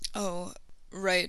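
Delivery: sorry, soft, apologetic voice. A boy replies after a girl explains something he forgot, apologetic. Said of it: "Neville replied apologetically".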